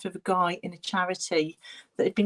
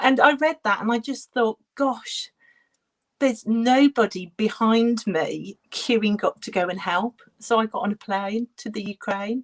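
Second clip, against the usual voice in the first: close to crying, on the verge of tears; 3 semitones higher, 4 dB louder than usual. Telling a personal story about going abroad to help, on the verge of tears. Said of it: "Oh, I'm going to cry".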